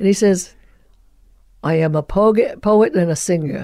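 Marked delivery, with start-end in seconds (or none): 1.6-3.6 put-on Brooklyn accent. Retelling an actor's line from Spartacus: imitating a Brooklyn accent. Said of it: "the Brooklyn Spartacus?".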